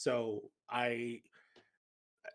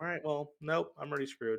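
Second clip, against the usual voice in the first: ordinary talk, nothing marked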